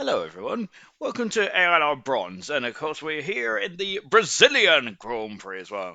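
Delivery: affected posh English accent with swooping pitch. Welcoming everyone to the Brazilian Grand Prix: put-on posh accent. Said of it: "my, uh, little posh accent".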